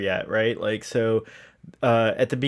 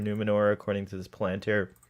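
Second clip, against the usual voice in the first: ordinary talk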